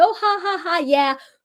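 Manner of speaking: acted, laughing, jokey tone. Describing a man's defensive reaction during a tense talk, imitating defensive laughing. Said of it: "His defense is laughing, joking".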